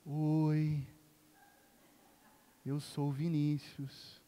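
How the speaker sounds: calm, soft, quiet, very slow, drawn-out oi. Imitating Vinícius introducing himself, quiet. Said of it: "Ele fala assim, ele é tranquilo".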